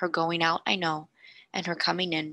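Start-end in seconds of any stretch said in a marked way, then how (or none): none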